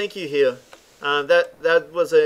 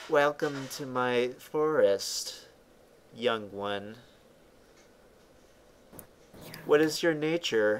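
soft, disembodied whisper, as if right in the ear; 3 semitones lower, 9 dB quieter than usual. Narrating a game to a player, the speaker voices a disembodied whisper. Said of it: "and they whisper".

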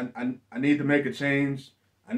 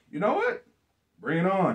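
play-acted cocky, overconfident, swooping tone, pitched up; 6 semitones higher than usual. Retelling a wrestling promo, imitating an overconfident reply. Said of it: "overconfident as hell".

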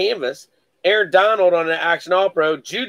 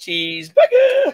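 put-on boy voice, higher. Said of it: "You can hear the voice he says it in".

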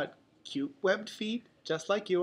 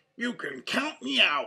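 grouchy, grumbling, dismissive tone. Invited along by his friends, a reluctant companion answers, grumbling. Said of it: "Donald grumbled".

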